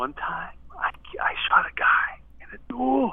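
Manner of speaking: whispering. A caller tells the radio hosts a big secret up close, whispering. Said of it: "I got to whisper it".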